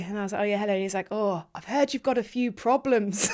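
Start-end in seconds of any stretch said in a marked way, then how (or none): 1.1-3.3 attempted, put-on northern English accent. Retelling what a man said to her, in an attempted northern english accent. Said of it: "I'm going to try and do a northern accent".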